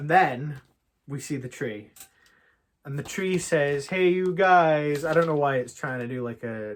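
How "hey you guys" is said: loud, high hollered call in a character voice. Retelling what a tree said in a game: Sloth voice from The Goonies. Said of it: "Sloth impression from the Goonies".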